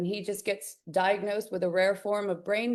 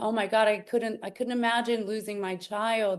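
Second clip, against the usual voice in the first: words said through tears, tearful and crying. Retelling own past words about a child's cancer death: retelling own past crying. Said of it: "and crying, like".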